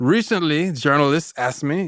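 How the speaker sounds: put-on French accent. Quoting Redoine Faïd on what journalists asked, Redoine Faïd French accent. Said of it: "Forgive my French accent".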